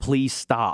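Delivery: mock-screaming, put-on scream. Teasing the other speaker by acting out how they reacted, retelling a scream. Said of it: "You were screaming and you were like".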